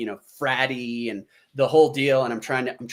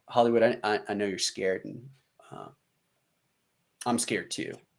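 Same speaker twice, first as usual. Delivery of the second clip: soft, hushed, gentle fatherly voice; 2 semitones lower, 6 dB quieter than usual. Retelling what the sergeant said to him, in a soft dad voice. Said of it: "he takes kind of more of the the soft dad voice".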